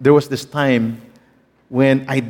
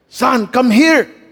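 voice pitched very high; 11 semitones higher, 4 dB louder than usual. Retelling how dad called from the staircase, imitating dad speaking English. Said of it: "when my dad speaks English, oh my".

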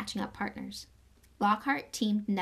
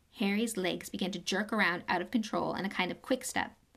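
ordinary delivery, nothing marked

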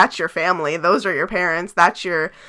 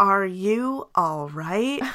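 very slow, robotic, each word dragged out; 4 dB quieter than usual. Retelling an actress's line from the film, robotic line delivery. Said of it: "She sounded like a robot".

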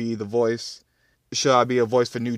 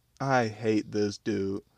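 plain

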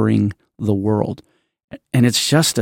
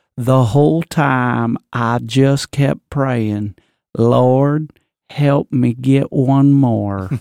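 very slow, time-stretched Virginia twang. Retelling a movie's interview, speaker quotes the interviewed man in a Virginia twang. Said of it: "I'm doing it".

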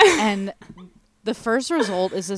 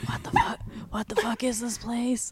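put-on whisper, higher pitched and quieter; 4 semitones higher, 6 dB quieter than usual. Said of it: "we're whispering at this point".

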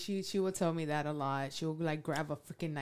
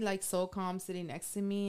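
ordinary delivery

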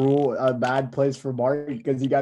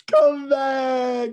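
tearful crying voice, higher; 12 semitones higher, 4 dB louder than usual. Retelling a video recorded to an ex after a breakup: imitating own crying plea. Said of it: "And I was crying".

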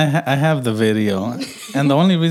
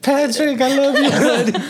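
shrill, very high, loud yell; 12 semitones higher than usual. Retelling yelling at a grown man from three feet away, retelling a yell. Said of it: "I'm yelling at him".

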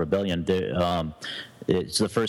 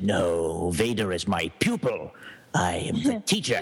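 slow, gruff little in-character voice. Answering people who mistake him for Darth Vader, in gruff little Emperor voice. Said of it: "in my gruff little Emperor voice".

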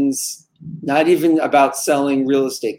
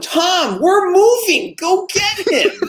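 mock very high, long-drawn shriek. Telling a story, voicing the wife calling to her husband, imitating someone yelling. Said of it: "And she's yelling".

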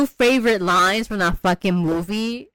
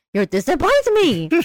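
angry, pitched-up, diva-like scolding; 7 semitones higher than usual. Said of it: "she said it so angrily too".

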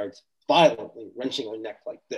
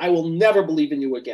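full, acted-out screaming outburst; 4 semitones higher, 4 dB louder than usual. A speaker retells a woman's outburst at God, imitating someone screaming. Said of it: "She's screaming all this stuff".

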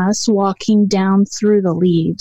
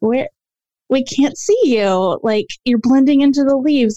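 mock baffled, searching, confused, pitched-up tone; 5 semitones higher than usual. Retelling what you and the girls called to an unseen woman's voice, mock-confused asking. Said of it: "it was just such a confused feeling".

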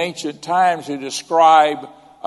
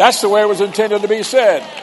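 ordinary talk, nothing marked

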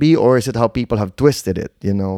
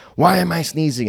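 mock furious, very angry, demanding tone; 4 semitones higher than usual. Retelling Philip's complaint during an allergy attack: imitating Philip's angry complaint. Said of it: "he'll do it in a very angry way".

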